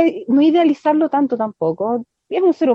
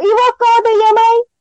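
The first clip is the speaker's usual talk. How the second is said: play-acted shrill, very high yell; 11 semitones higher, 4 dB louder than usual. Complaining about an intro clip, quoting own earlier words: imitating own past shout. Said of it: "¿Cómo me ponen gritando".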